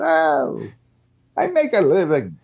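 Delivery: put-on old man voice, high and sing-song.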